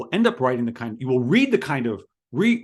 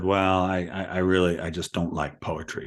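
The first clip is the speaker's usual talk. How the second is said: very low, sorry-sounding, apologetic voice; 7 semitones lower than usual. Recounting what a woman said in a talk about poetry, imitating her dropped, apologetic voice. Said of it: "dropped her voice and said".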